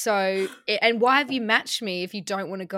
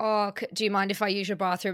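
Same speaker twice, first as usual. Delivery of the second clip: ordinary talk, nothing marked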